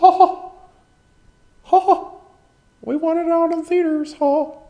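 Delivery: high, loud, squeaky voice. Complaining a movie isn't on Disney Plus, the speaker does a Mickey Mouse impression. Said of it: "Mickey Mouse impression".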